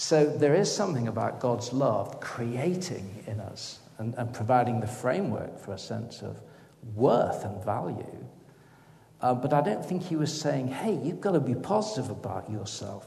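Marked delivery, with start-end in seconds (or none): 10.7-13.1 slight put-on American accent. Discussing a teaching on God's love, mocking a misreading in a slight American accent. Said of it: "in a slightly American accent there".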